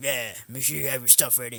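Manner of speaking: low, no-nonsense drill instructor voice. Retelling what his coach told him before a fight: imitating Coach Zayde, drill instructor voice. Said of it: "you sound like a drill instructor".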